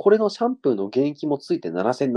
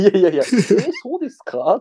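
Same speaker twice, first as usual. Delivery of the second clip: high, put-on quavering, trembling voice; 7 semitones higher than usual. Retelling his reply on being told about a bald spot, in a mock-trembling voice. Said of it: "震え声で".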